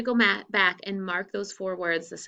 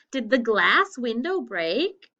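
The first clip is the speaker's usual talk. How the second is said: voice lifting at the end on break; 4 semitones higher, 5 dB louder than usual. Explaining question punctuation, rising end on 'break'. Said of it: "Did you hear my voice go up?".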